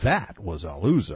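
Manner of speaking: ordinary talk, nothing marked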